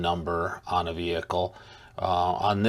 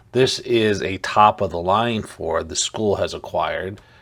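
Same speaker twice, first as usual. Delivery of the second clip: normal talking voice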